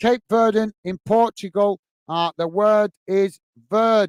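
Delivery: ordinary delivery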